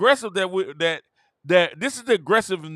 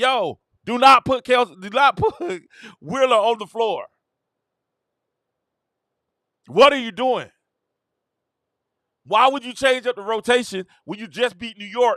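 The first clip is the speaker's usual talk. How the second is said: insistent, protesting, screaming voice; 4 semitones higher than usual. Retelling what they screamed at the coach about the rotation: retelling screaming at coach. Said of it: "We're screaming at her like".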